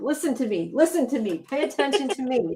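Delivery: cat voice. Joking about the other speaker's cat wanting attention: voicing the cat. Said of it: "your cat is like".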